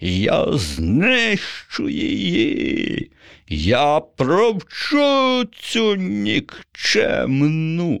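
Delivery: shrill, swooping shout in an unnatural voice. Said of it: "закричав не своїм голосом".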